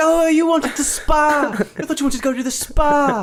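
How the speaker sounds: hyped, amped-up burst, very high and loud. Retelling a street meeting between two fighters: imitating amped-up Darren Till. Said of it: "Darren Till's so, like, amped up".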